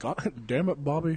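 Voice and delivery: mock doddering old man voice. Speaker says Mr. Mackey's voice sounds like Hank Hill, doing a senile old Hank Hill voice. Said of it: "a really senile old Hank Hill".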